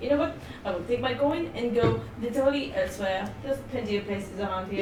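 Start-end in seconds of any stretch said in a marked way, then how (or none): none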